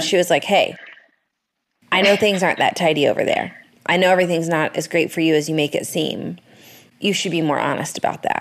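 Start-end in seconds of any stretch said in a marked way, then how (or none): none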